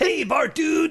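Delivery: very high, squeaky cartoon voice. Naming a favorite character and showing he could be him: Otto voice. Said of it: "I could be Otto".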